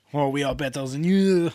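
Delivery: snooty, superior, pompous put-on French accent. Listing the most pompous accents, does a pompous French accent. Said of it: "Or French".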